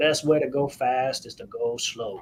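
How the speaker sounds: put-on slow South Louisiana accent. Quoting a former boss's advice in a South Louisiana accent. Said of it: "in his, you know, South Louisiana accent".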